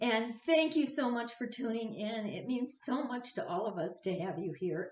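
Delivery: choked up, tearful, crying while talking. Thanking everyone for tuning in to the ceremony, tearful, crying while talking. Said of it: "I'm crying already".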